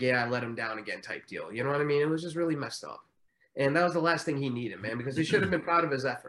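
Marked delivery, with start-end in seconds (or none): none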